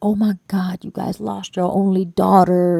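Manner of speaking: grieving man crying out, sobbing, crushed lament. Retelling a family friend's words at the grandma's house: imitating a crying man. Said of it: "he's crying".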